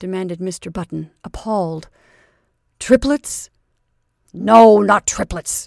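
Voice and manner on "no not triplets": cutting, biting, louder and slower. Narrator reads the doctor's reply to Mr. Button, cutting. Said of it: "answered the doctor cuttingly".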